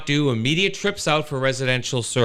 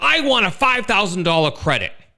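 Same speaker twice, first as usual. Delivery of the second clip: angry, irate voice, pitched up; 7 semitones higher, 4 dB louder than usual. Retelling a customer call, imitating an angry swearing customer. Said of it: "again starts swearing at me".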